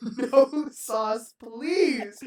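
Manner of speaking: high, very loud, insistent shout. Retelling how a woman ordered, the speaker imitates her yelling into the speaker. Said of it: "this led to her yelling".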